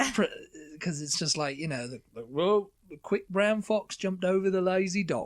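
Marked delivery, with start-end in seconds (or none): 2.3-5.3 pitched-up, botched put-on cockney accent. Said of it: "I can't really do his".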